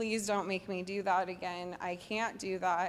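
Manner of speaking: tearful, crying, pleading voice. Retelling a phone call afterwards, quoting own plea: retelling a tearful plea. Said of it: "and I was crying".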